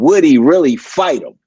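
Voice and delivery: dry, mocking, sarcastic tone. Repeating a question about a fight to another speaker: sarcastic tone. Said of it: "I'm putting a bit of sarcasm on it".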